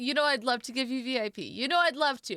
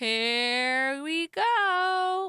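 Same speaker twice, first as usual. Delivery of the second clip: voice breaking and cracking, word "go" drawn out; 4 semitones higher than usual. Starting another risky round, voice cracking. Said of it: "My voice just cracked".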